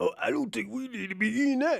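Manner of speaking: worn-out voice of a lifelong chain smoker. Mocking RFK giving advice on health: RFK impression, smoker's voice. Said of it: "sound like he's smoking Newport cigarettes".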